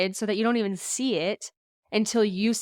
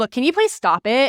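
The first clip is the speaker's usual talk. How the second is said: pointed, raised voice with attitude; 4 semitones higher, 8 dB louder than usual. Showing how not to word a tricky message to a client: with an attitude. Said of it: "that has an attitude to it".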